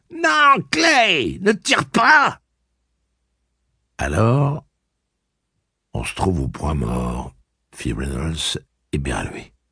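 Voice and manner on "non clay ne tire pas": very high, very slow, shrill and panicky cry. Narrator reads a character begging his pal not to shoot, shrill and panicked. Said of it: "s'écria De Pape d'une voix suraiguë où perçait la panique".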